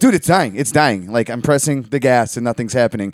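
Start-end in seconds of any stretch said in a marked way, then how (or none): none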